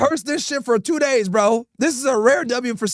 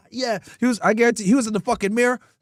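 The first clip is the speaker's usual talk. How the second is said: ordinary delivery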